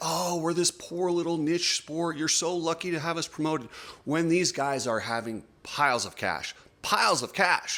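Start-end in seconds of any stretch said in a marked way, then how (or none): 0.0-3.7 imploring, pleading, begging tone. Retelling what the event organizers keep saying: imitating a pleading tone. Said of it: "this pleading like".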